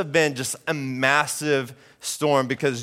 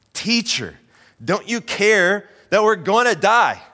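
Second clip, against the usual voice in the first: mock desperate, pleading shout, high and drawn-out; 6 semitones higher, 4 dB louder than usual. Retelling how the disciples wake the teacher: imitating disciples shouting. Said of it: "they're shouting at him".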